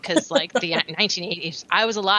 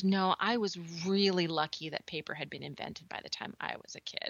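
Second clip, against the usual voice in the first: mock-serious deadpan, much quieter; 11 dB quieter than usual. Retelling her reply to someone at school who joked about age, retelling a deadpan reply. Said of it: "So I completely deadpanned".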